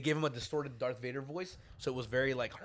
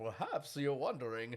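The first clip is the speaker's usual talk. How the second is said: put-on Spanish-accented, half-smiling; 4 dB quieter than usual.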